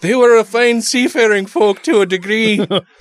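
high-pitched put-on South African accent. Talking about the Romans at sea, speaker slips into a South African-sounding accent. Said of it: "That sounded South African".

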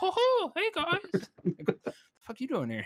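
pushed way up, loud and bouncy.

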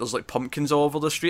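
plain

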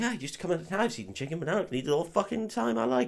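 high, plummy, very posh English lady voice. Retelling a film scene, quoting a woman at dinner: imitating a posh woman. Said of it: "she's incredibly posh".

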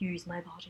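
eerie, creepy double voice, very quiet and hushed. Retelling a scene where she whips around at him: creepy split double voice. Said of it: "in this creepy, like, split voice".

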